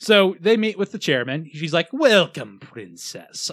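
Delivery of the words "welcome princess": put-on cartoon villain voice. Retelling a story where the chairman welcomes a princess: Disney villain voice. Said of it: "I don't know why I went Disney villain voice for him, but I did".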